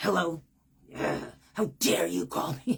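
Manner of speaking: loud, gruff, unwelcoming guard-dog voice. Speaker showing how they answer the phone, sounding like a guard dog. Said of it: "I probably sound like a guard dog".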